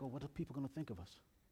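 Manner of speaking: anxious, soft, fast worried aside.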